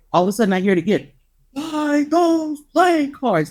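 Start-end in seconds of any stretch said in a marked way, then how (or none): 1.5-3.5 slow, huge, booming delivery. Retelling a voice heard while standing in line, like thunder. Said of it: "Like thunder. That's what the voice sounded like".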